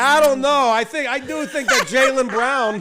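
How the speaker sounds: drawn-out Boston accent. Imitating another speaker calling in as a fan: imitating a Boston accent. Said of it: "throwing your Boston accent is like".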